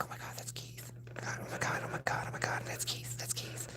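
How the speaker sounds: thrilled, starstruck, barely voiced hushed whisper. Telling how a girl recognized him, the speaker imitates her whispering to her coworker. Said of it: "she starts like whispering to her coworker".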